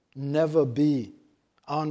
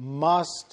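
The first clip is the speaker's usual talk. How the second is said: emphasizing the word must. A speaker reading a bible verse aloud to listeners, stress on 'must'. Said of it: "And I stress that word must".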